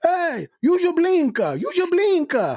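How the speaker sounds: put-on Portuguese accent, very high-pitched and slow. Speaker quotes a character from a driving skit, Portuguese accent. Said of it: "Portuguese guys".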